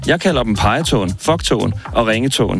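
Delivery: ordinary talk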